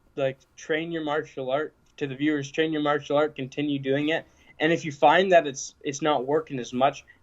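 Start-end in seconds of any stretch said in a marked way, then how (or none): none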